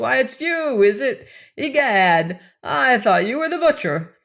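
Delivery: cracked piercing voice. Reading a story aloud, an old man calling from a window: cracked, piercing voice. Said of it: "cried he in his cracked and piercing voice".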